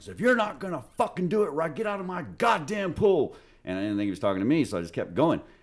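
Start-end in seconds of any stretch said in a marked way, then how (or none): 0.1-3.3 shrill, very high-pitched, raised screaming rant. Retelling how a guy at boot camp screamed at him in the pool, retelling a guy screaming. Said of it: "this guy screaming at the top of his lungs".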